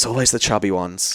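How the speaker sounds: hushed, voiced half-whisper stage whisper. Retelling a comic's line to a heckler into the mic: imitating a half-whisper. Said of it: "he whispers into the mic".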